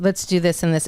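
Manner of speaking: normal talking voice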